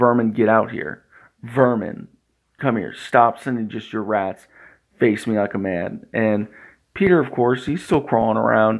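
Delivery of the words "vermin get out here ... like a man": ordinary talk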